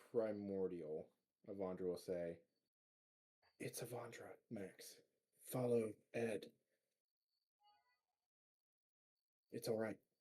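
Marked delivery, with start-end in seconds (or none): 3.6-9.9 hushed, half-whispered stage whisper. Half-whispering in character to max to follow ed: half-whispering in character. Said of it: "whispering at, at, at Max?".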